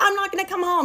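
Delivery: mock shouting, yelled back high pitched. The speaker quotes a woman yelling back at a man over the phone; retelling a yell. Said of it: "She's yelling back".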